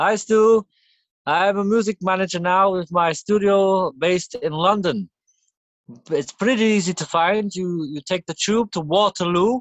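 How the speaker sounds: put-on Swedish accent. Speaker acts out Benny calling Stu, in Benny's put-on accent. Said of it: "Why is he getting on with the voice? With the accent?".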